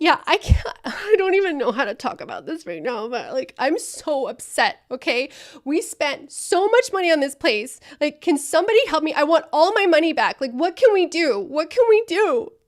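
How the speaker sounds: loud, upset, childish put-on toddler voice. Role-playing an upset customer calling a help line, acting like an upset child. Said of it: "I'm acting like a child".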